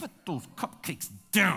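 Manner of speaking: spoken through gritted, clenched teeth. A parent retelling what they said to their child, through clenched teeth. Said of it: "When you talk through your teeth".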